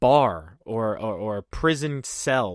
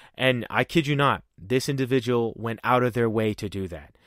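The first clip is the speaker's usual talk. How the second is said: ordinary talk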